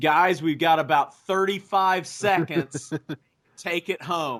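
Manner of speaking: big booming bellow, acted out. Retelling what a man shouted during a wrestling match, acting out his bellow. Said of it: "he just bellows it out".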